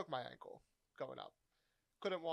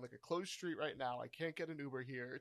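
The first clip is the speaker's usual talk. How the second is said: ordinary delivery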